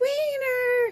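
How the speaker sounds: high put-on screaming.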